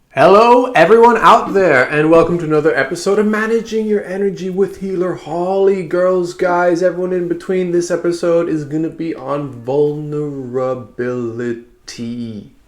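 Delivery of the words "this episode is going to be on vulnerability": very slow, drawn-out, deliberate and weighty delivery. Host opening another episode of her show names the topic, said slowly. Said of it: "I say that slowly".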